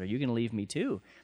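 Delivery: ordinary delivery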